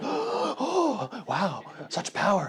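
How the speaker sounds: very slow awed gushing, high and swooping. Narrating a game, the speaker voices a crowd circling a player: awed crowd voice. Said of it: "some people are crowding around you, and they're just like, uh, "Wow, wow, such a young child, destined to be a, a great adventurer." People are just like, / People are just like".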